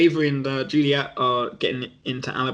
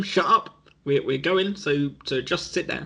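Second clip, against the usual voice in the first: ordinary delivery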